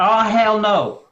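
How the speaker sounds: loud, best-effort put-on American accent. Saying three words in a put-on American accent: best American accent. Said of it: "I'm gonna try and do my best American accent".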